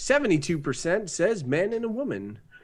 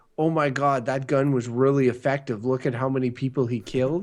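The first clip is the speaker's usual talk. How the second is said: ordinary delivery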